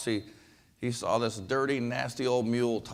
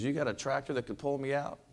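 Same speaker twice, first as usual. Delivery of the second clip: ordinary talk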